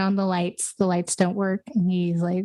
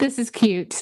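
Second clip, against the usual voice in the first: brash, cocky, self-assured, acted, full-of-himself delivery; 4 semitones higher than usual. Retelling a film's final scene, imitating Mitch: cocky Mitch voice. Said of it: "a very, like, cocky".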